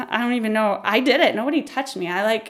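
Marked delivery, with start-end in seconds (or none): none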